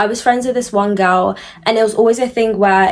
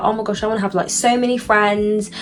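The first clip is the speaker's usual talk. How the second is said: normal talking voice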